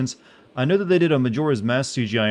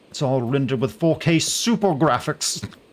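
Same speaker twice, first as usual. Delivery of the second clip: bragging, boastful show-off hype voice; 3 semitones higher than usual. Mocking a game showing off its visuals: mock show-off graphics voice. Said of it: "that's the voice I use for making fun of".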